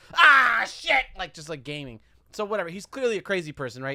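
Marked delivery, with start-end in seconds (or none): 0.2-1.1 put-on yell, higher and louder. Retelling a subway gamer playing alone, imitating a gamer yelling. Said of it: "He's yelling".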